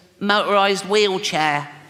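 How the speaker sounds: put-on little boy voice. Acting out a father asking his six-year-old about Christmas, little Timmy voice. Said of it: "I promised Jane I wouldn't do the voice".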